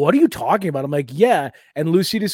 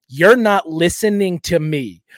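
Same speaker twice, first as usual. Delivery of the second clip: acted-out, slow, affronted, every word over-enunciated; 3 dB louder than usual. Retelling how they argue when drunk, imitating own indignant enunciated voice. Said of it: "really enunciate".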